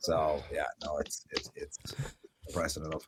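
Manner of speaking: mock defeated whisper, soft and unvoiced, despairing.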